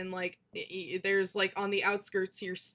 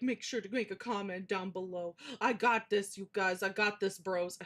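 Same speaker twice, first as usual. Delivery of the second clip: mocking, mimicking voice; 4 dB quieter than usual. Reacting to a video, mocking the person in it: mocking imitation of the video maker. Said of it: "I'm just being mean".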